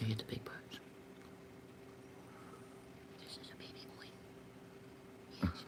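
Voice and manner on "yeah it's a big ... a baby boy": soft, hushed whisper. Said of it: "Why is he whispering?".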